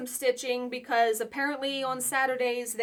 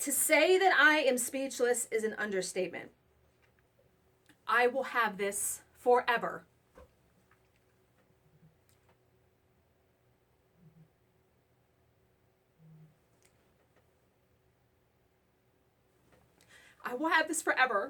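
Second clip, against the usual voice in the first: choked-up tearful voice, on the verge of crying. Thanking the people who stitched pieces for her, she speaks: on the verge of tears. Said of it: "I'm about to start crying again".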